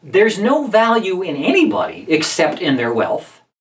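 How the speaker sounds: normal talking voice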